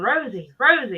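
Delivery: normal talking voice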